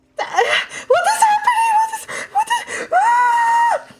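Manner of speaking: frightened shriek. Voicing a startled character after an audible female shriek: frightened shriek. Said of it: "there is a audible female shriek".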